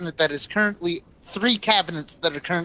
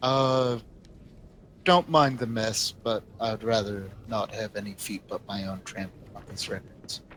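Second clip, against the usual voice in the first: very deep, low character voice; 8 semitones lower, 5 dB quieter than usual. Narrating, the small rat-like character greets expected visitors in a deep Feng Shen voice. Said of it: "in a deep, deep voice that completely goes against the fact of the small rat-like body".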